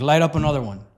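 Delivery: normal talking voice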